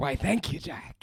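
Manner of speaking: breathy, whispered character voice. Trying a promised impression of a pirate captain: Barbossa voice. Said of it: "I'm gonna try and do my, my Barbosa".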